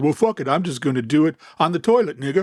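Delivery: rebellious, badass declaring delivery. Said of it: "it was an impression of him".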